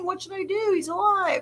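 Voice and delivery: high, tearful sob-talk, crying voice. Retelling how the queen reacts on the show: imitating someone crying. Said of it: "She's crying. She's like".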